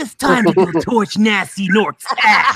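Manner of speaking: put-on cartoon character voice. Doing character voices for the group, praised as spot on: Spyro the Dragon voice. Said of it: "we gotta start off with Spyro the Dragon. You guys remember this voice?".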